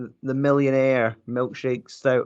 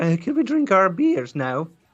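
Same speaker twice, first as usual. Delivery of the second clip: put-on dopey, bumbling oaf voice, pitched up; 7 semitones higher than usual. Joking about how they would sound next to the other speaker: put-on bumbling oaf voice. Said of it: "I'll come in like the bumbling oaf going".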